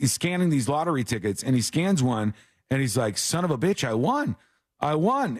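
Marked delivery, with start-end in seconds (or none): none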